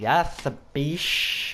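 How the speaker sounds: exaggerated, flamboyant, over-the-top camp voice. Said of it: "gave her the gayest voice I'd ever had".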